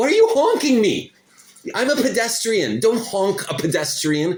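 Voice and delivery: shrill, very high, furious, angry scream. Recounting being honked at in a crosswalk, the speaker re-enacts the moment: retelling screaming at a driver. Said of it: "I started screaming at them".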